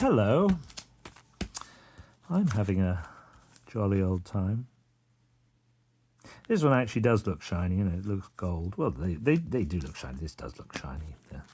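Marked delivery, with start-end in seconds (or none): 0.0-4.7 put-on, forced jolly, sing-song cheer over gloom. Trying to sound upbeat after noticing a low mood: faking a cheerful voice. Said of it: "let's try and fake it".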